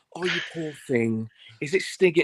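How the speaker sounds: mock-caring, imitated motherly voice. Retelling what a woman said on hearing about the mishap, imitating a caring mum. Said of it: "the most adorable, caring mum voice".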